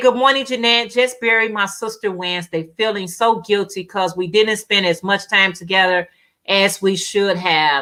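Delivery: ordinary delivery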